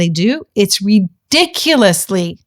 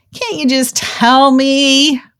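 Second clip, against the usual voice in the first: put-on childish whine, slow and drawn out; 5 semitones higher than usual. Recalling their past self asking for help, mock-whining. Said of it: "I do remember whining and saying".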